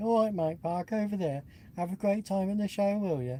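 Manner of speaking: put-on friendly Brummie accent. Describing people met at a show, doing a Brummie accent impression. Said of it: "my impression of Brummie".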